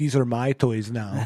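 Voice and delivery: terrible put-on Saudi Arabian accent. Imitating a Saudi prince keeping stranded wrestlers: terrible Saudi Arabian accent. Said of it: "that was a terrible accent for a Saudi Arabian guy".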